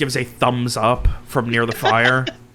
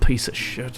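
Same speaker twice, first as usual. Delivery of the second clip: barked under breath, much slower; 4 dB quieter than usual. Narrator voicing a character's aside after another speaks: barked under his breath. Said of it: "Under his breath, he just barked".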